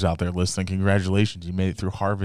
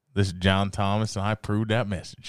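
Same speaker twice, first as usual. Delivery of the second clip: ordinary talk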